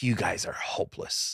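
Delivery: put-on disgusted tone. Retelling a geography teacher throwing students out: imitating a disgusted teacher. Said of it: "He just looked at us with utter disgust".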